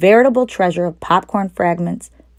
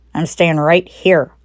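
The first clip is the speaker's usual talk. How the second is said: grumbly, grumbling voice. Narrator reads the rat's reply to the others, grumbling. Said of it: "grumbled the rat".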